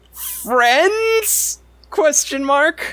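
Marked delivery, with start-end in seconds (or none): 0.1-1.5 very loud, very high-pitched call. Retelling a man standing in front of a crowd, very loud. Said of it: "he says very loudly".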